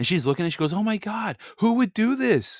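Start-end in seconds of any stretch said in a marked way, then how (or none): 0.7-2.6 play-acted alarmed, panicked disbelief, high and drawn-out. Speaker retells a woman seeing a mark on her car door, imitating her freaking out. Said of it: "she was like freaking out".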